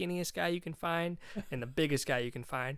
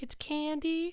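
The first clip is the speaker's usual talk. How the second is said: put-on girly voice, pitched very high; 13 semitones higher than usual. Dressed up as a girl in a line-up, giving his name in a fake girl voice. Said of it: "my like fake girl voice".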